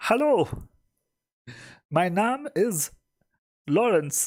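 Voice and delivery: high and slow. Putting a voice on an answer machine greeting: Kermit the Frog voice. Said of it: "Kermit the Frog representing".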